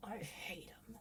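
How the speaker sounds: whispered, pained, breathy, hurting delivery. Critiquing a film line, speaker shows how it should sound in pain. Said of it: "he should sound a little more like in pain".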